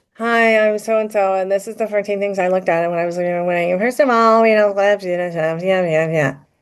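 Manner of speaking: level, flat, droning monotone voiceover. Describing a kind of voice to a listener and demonstrating it: monotone TikTok voice. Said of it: "it's a monotone TikTok voice".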